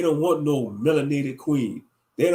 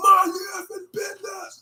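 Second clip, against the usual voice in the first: put-on yell, higher pitch. Retelling what he'd say to nosy onlookers: imitating own hollering. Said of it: "I would holler at him too".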